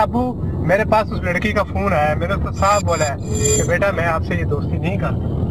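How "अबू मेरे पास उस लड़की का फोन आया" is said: plain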